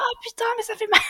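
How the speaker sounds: put-on very high yelped cry of pain. Retelling her contraction on the way to the delivery room: imitating her own pained cursing shout. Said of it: "je crie quelques petites grossièretés aux contractions".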